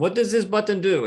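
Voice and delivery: fake Indian accent. Acting out a sketch about test pilots from India: put-on Indian accent. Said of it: "test pilots from India, you know, talking like this".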